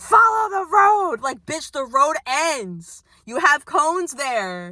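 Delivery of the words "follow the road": furious, shrill, loud, angry scream. Retelling how a guy at a coned-off road screamed: imitating a man screaming. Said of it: "like screaming".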